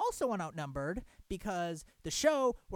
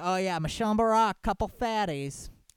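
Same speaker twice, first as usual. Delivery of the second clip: put-on sarcasm, louder; 8 dB louder than usual. Speaker paraphrasing a TV guest's remark, retelling a sarcastic jab. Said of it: "as if somehow Barack's a fatty".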